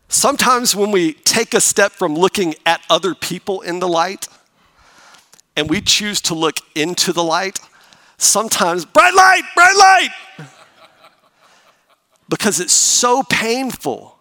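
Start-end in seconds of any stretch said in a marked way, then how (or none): 8.8-10.4 shrill, very high, very loud creature shriek. Comparing looking inward to the creature's fear: imitating a Gremlins creature screaming. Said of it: "callback to creature's screamed line".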